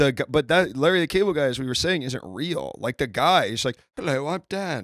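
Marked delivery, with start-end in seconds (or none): 4.0-4.8 high-pitched, pitched-up, proper British voice. Joking about the actor, imitating Dan: proper British accent. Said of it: "he's a proper British actor".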